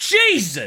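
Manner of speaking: high, loud, amazed shout.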